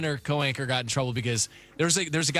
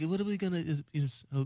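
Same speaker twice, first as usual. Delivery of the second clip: put-on Liverpool accent, quieter; 2 semitones higher, 5 dB quieter than usual. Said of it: "[name] is like".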